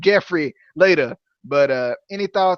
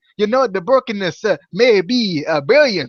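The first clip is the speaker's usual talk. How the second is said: halting, clumsy, failed put-on Jamaican accent; 3 semitones higher than usual. Retelling what a man said at the microphone, in an attempted Jamaican accent. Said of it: "I'm trying to go with the Jamaican accent".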